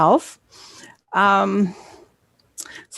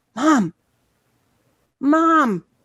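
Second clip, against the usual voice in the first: high, projected calling voice. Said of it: "I'm calling for my mom".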